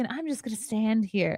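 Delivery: gentle, soft, quiet little voice. Retelling how a small, soft-spoken woman in a clip seemed: imitating a soft-spoken woman. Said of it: "soft spoken".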